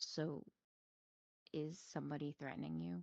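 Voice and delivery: whispering. Voicing a character who sits beside a crying NPC: whisper. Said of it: "and then whisper".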